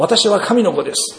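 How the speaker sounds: high, loud, declaiming voice. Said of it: "と大声で言いますとですね".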